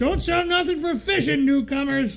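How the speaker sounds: very high-pitched put-on shopkeeper voice. Telling how Sarge speaks while tying flies, in a put-on Sarge voice. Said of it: "I'm just making a voice".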